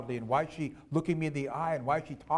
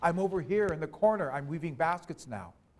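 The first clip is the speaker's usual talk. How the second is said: ordinary talk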